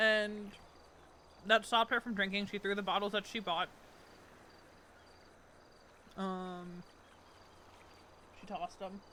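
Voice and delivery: speaking while chewing, mouth full of food. Speaker recapping events while eating lunch; talking while eating. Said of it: "I'm still eating my lunch".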